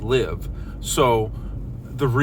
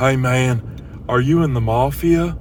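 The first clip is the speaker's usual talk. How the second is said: mock drunk man voice, slower. Retelling a car full of drunk people, imitating a drunk passenger. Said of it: "a car full of drunk people... I'll do my best with inflections to tell them apart".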